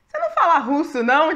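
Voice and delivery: high, loud, sly ironic jab.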